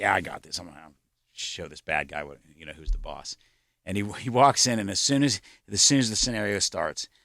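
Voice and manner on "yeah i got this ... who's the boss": mock cocky, swaggering tone full of bravado. Retelling how a board member volunteered for the shoot scenario: imitating a cocky boast. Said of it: "being all cocky".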